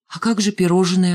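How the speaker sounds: plain reading voice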